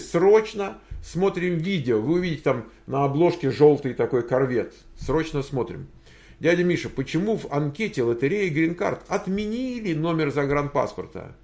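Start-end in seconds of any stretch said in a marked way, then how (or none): 0.0-2.0 high, slow, drawn-out voice. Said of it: "urging viewers to watch".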